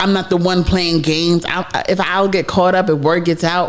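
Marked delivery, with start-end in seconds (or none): none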